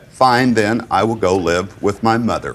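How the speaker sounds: ordinary delivery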